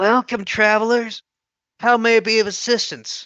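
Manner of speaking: put-on high, aged, worn, chafed old woman's voice. Narrator voicing an old female face greeting travelers, old chafed voice. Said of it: "She speaks with a voice that sounds like it was old and chafed".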